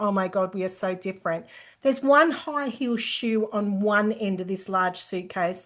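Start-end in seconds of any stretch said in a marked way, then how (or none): 0.0-1.5 put-on laughing while speaking, lower. Retelling opening a friend's messy suitcase: imitating own past laughing talk. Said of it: "I'm just laughing and going".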